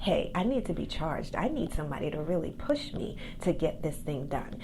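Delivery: ordinary delivery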